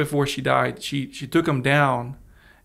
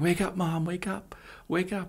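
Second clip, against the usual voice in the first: high-pitched, drawn-out begging through sobs; 5 semitones higher, 7 dB quieter than usual. Retelling trying to wake Mom on the couch: retelling crying while pleading. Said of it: "I started crying".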